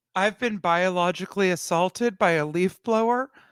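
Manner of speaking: mock crying voice. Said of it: "you're gonna put on a fake cry cry voice".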